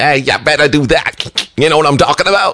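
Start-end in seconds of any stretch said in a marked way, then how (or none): 0.0-1.5 mock wise-guy voice, higher and slower. Retelling how a friend talks while pointing at you, imitating a wise-guy voice. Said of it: "talks like a wise guy".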